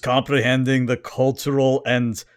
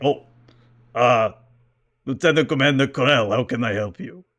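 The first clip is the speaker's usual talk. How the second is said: put-on heavy German accent. Retelling a scene, one character answers a lieutenant commander; Arnold Schwarzenegger German accent. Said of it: "attempt to do Arnold but German".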